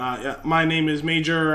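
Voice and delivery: plain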